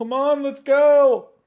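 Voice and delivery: high, loud yell. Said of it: "he's gonna yell".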